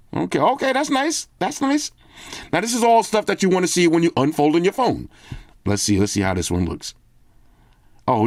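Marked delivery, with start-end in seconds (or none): 0.4-1.9 very high, gushing, admiring, drawn-out delighted voice. Looking over items they really like, high voice. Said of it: "take it to the high voice".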